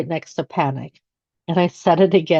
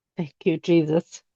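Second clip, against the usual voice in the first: put-on whisper, quieter; 5 dB quieter than usual. Retelling own words on the drive home: retelling a whisper. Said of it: "I did whisper again".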